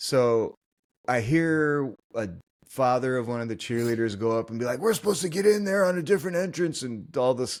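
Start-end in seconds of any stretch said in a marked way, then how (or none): 4.8-6.8 stressed, frantic, high, rushed, freaking-out voice. Retelling a cheerleader's father at the entrance line: imitating a freaking-out father. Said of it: "he was actually freaking out".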